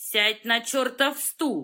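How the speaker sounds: hard, harsh, stern, commanding tone. Zinchukov commands Zara again: harsher command. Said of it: "жестче скомандовал Зинчуков".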